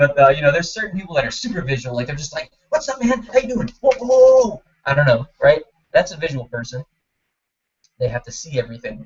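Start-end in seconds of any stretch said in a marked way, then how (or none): 2.7-4.6 rapid-fire, rattled-off chatter, very high-pitched. Demonstrating how super visual people talk, talking really fast. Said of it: "they talk really fast".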